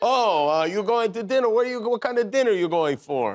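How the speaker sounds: put-on Italian accent. Playing a character in a comedy skit, in an Italian accent. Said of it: "I think I'll do like an Italian accent".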